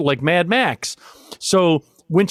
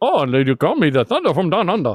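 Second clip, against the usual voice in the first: bad, wrong, put-on Australian accent; 2 semitones lower than usual. Imitating how she would react, in a bad fake Australian accent. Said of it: "No, that's the wrong accent too".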